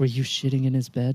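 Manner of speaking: soft, hushed half-whisper. Speaker imagines hugging Wilton and asking him something, half-whispering. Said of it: "give him a hug and whisper".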